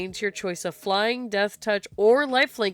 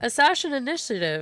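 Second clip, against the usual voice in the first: words pushed out while swallowing; 4 semitones higher than usual. Speaker says a title in the middle of a swallow: speaking mid-swallow. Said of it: "I was in the middle of a swallow when I said it".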